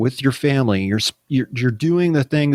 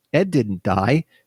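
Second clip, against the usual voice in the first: ordinary delivery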